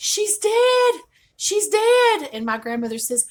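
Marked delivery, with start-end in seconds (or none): 0.0-2.3 shrill, very high, very loud, drawn-out scream. Retelling how a child came running in and screamed the news: imitating someone screaming. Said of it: "she screams".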